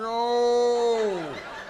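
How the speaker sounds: put-on slow, drunken-sounding pleading tone.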